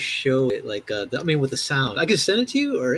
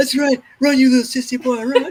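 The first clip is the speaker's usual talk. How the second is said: high, ridiculing jeer, pitched way up; 11 semitones higher, 3 dB louder than usual. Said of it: "[name] is, like, ridiculing somebody".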